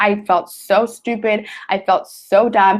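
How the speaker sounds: slow, tearful, emotional voice, near crying. Recalling how she felt going through college, tearing up. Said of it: "I'm tearing up because I get emotional".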